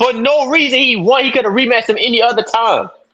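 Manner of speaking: heated high-pitched outburst. Arguing about a rematch until another person asks why they are yelling: yelling. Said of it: "we yelling, bro?".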